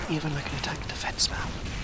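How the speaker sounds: soft, unvoiced, secretive whisper.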